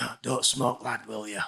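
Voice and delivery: put-on coughing voice. Retelling a man's warning not to smoke, imitating a coughing voice. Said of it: "he's doing this with his voice, like coughing".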